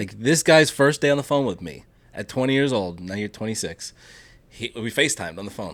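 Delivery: plain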